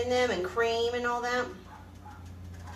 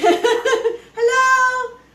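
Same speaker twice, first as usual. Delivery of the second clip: loud, high-pitched, laughing yell. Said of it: "I'm yelling hi like you can hear me".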